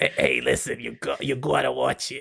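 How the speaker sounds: put-on elderly smoker voice, acted. Mocking another speaker's girlfriend, in an 80-year-old smoker voice. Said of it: "your girlfriend sounds like an 80-year-old smoker".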